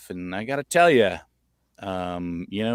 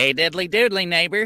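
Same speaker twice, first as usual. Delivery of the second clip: raised-pitch cartoon character voice; 8 semitones higher than usual. Showing how the Flip character sounds: Flip voice like Ned Flanders. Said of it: "Flip kinda sounds like".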